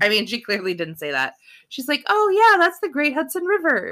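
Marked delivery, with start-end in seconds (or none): 2.1-3.9 very high-pitched, kindly tone. Imitating what a woman actually said, not the insult: mock-kind voice. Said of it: "that was me in a kind voice".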